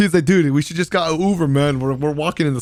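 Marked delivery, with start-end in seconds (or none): 0.2-1.8 whiny complaining. Retelling the hot walk to the hotel, the speaker quotes Pure Chill, imitating him crying. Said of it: "starts crying".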